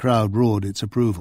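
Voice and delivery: plain reading voice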